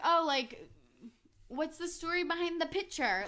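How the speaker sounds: high, forced-casual voice with petty edge creeping in. Retelling asking a partner about a photo: imitating own high-pitched petty fake-casual voice. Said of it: "trying to sound casual as my voice gets, like, h-, more high pitched and more petty".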